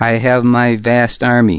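ordinary delivery

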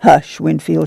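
plain

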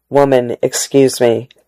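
ordinary delivery, nothing marked

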